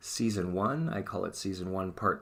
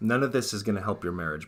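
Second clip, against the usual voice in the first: ordinary delivery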